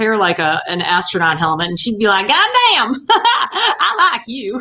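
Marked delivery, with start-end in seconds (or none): 2.3-4.6 put-on high-pitched, drawn-out Oklahoma accent. Speaker imitates their mother, who came from Oklahoma: mother's Oklahoma accent. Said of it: "I can't do my mother without doing her accent. She came from Oklahoma".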